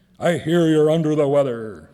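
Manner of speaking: loud, gravelly, grinding voice. Reading a story aloud, voicing a woman who comes up the stairs: gravelly voice like Wallace Beery. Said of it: "in a gravelly voice, a texture of Wallace Beery's".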